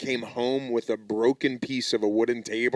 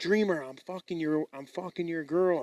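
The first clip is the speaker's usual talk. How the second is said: whispered, much quieter delivery; 6 semitones higher, 3 dB quieter than usual. Retelling what a man used to say to a woman, whispered. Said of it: "I like how he whispers it".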